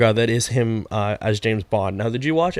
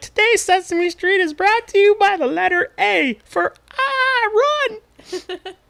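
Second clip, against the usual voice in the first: bad, very high-pitched, slow and drawn-out voice. Announcing the Sesame Street sponsor right after Game of Thrones, in a terrible Muppet voice. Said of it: "That was my terrible Muppet voice".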